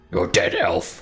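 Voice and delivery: furious, angry monster voice. Voicing a cloaker threatening an elf: angry cloaker voice. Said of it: "The cloaker just angrily".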